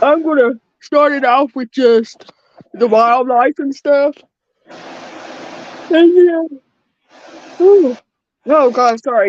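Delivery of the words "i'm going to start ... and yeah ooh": talking through a yawn. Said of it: "I'm yawning like a motherfucker now".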